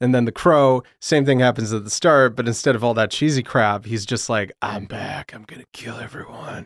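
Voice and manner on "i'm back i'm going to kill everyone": very quiet brooding voice, barely above a hush. Describing the hero coming back at the start of The Crow, in a Batman voice. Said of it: "Batman voice".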